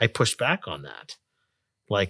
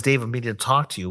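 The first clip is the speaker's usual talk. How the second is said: ordinary talk, nothing marked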